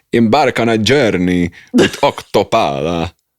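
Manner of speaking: loud, heavily laid-on fake Italian accent. Reading a Prosecco label aloud, in a Count Dracula-like fake Italian accent. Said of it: "So now you're Count Dracula".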